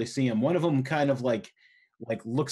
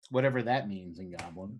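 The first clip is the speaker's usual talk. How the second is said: ordinary delivery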